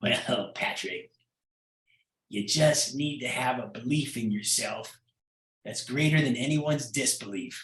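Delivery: put-on worn, gravelly old man's voice. Retelling a man's advice during a national TV news interview, in an old gravelly voice. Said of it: "he had this old kind of gravelly voice".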